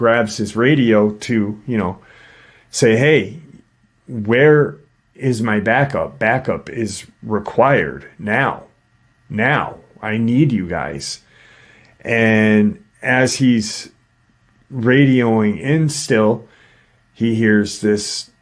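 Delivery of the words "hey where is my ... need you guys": usual speaking voice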